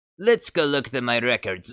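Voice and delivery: bad, not-very-good, sing-song Italian accent. Trying out a line while imitating an Italian accent, in a bad Italian accent. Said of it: "you gotta try and imitate an Italian accent".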